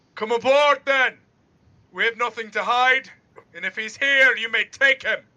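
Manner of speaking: high, loud, hailing shout.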